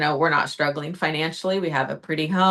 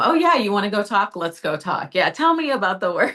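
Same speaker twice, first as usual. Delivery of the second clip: overeager placating tone, high and swooping; 5 semitones higher than usual. Retelling a panicked moment, the speaker acts out eagerly trying to appease a man. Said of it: "I just want to appease him".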